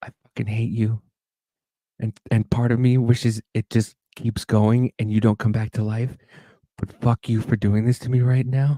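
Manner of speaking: gentle, hushed whisper. Retelling going right up to the sister's ear: imitating a gentle whisper in the ear. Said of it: "gently go right up to her ear and I go".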